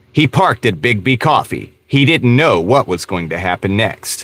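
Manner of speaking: synthetic text-to-speech AI narrator voice. Describing videos he clicks off, the speaker imitates an AI narrator voice. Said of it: "this voice that sounds like this".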